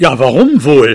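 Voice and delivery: growled, thrown-back reply. Narrator reading, the father retorting to another man's question: growled back. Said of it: "knurrte mein Vater zurück".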